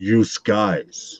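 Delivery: put-on Brooklyn accent on you guys. Imitating a viewer who went brooklyn: imitating a brooklyn accent. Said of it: "went Brooklyn on us".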